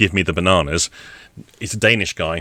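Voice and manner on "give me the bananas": ordinary delivery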